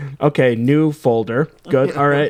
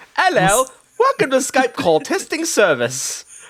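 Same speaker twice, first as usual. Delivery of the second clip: prim put-on nanny voice, higher; 10 semitones higher than usual. Imagining the Skype call testing woman as a live person: Mary Poppins voice. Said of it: "that sounded a lot like Mary Poppins".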